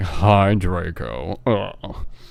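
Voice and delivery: put-on glum, deflated, flat, depressed voice. Retelling how she greeted draco, in a mock-depressed voice. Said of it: "in a depressed voice, so it was more like".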